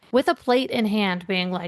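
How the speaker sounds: plain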